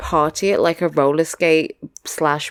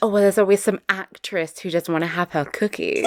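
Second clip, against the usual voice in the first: usual speaking voice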